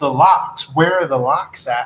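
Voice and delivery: ordinary talk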